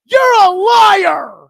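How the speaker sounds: loud, slow, high-pitched angry yell.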